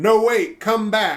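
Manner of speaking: very slow, high, loud, stretched-out, drawn-out yell. Speaker retelling what they yelled at fleeing enemies, retelling a yell. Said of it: "I just yelled".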